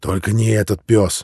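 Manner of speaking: ordinary delivery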